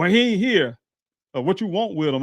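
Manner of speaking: high-pitched hollering yell. Retelling a man behind a glass window yelling at him: imitating a man yelling. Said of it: "he was yelling at me".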